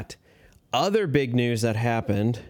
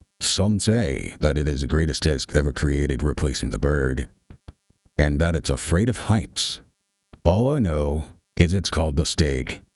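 electronically altered, very deep, low voice-changer voice; 8 semitones lower than usual. Announcing exciting news from Castoplast, through a voice changer. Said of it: "Hopefully that voice changer worked out".

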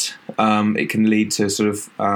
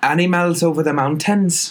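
attempted Welsh accent, pitched up; 7 semitones higher than usual. Asked how to do a welsh accent, trying one out, welsh accent. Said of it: "how do you do a Welsh accent?".

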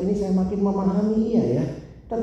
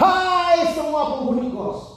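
acted call, very slow, high and stretched out; 9 semitones higher than usual. Telling a story of a boarder calling out to everyone at midnight, retelling a midnight shout. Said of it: "terus dia teriak".

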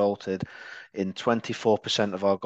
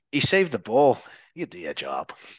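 poor, badly done put-on Irish accent; 2 semitones higher, 4 dB louder than usual. Talking about defenders, quoting Roy Keane in a poor Roy Keane Irish accent. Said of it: "That's a poor Irish accent".

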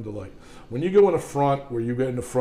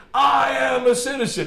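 piercing, very high, drawn-out top-of-lungs scream; 12 semitones higher, 3 dB louder than usual. Retelling what a woman on the street said while pointing at the sky; retelling a woman's screaming. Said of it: "She's screaming at the top of her lungs".

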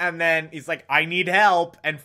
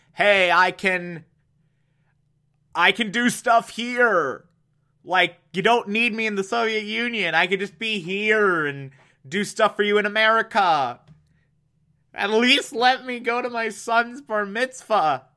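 mock pleading, begging voice; 3 semitones higher than usual. Retelling a scientist in the back seat pleading not to be sent back: imitating someone begging. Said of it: "begging to not be sent back".

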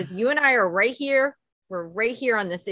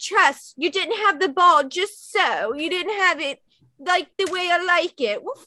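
put-on, pitched-up English accent; 8 semitones higher than usual. Recounting a player coming off the field, the speaker mimics him in an English accent. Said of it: "Was that your English impression?".

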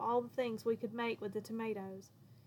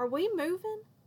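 sharp, pitched-up, demanding tone with an edge; 8 semitones higher, 3 dB louder than usual. At the family table, the narrator questions the parents: demanding with an edge. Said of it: "I demanded, my voice taking on the same edge".

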